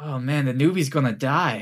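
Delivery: whispering voice. Voicing adventurers behind a player following the unicorn: whispering adventurers. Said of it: "you hear whispers behind you".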